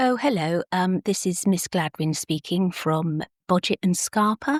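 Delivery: put-on posh, polite telephone voice. Acting out a phone call, posh phone voice. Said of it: "put on a posh phone voice".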